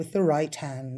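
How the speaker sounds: ordinary delivery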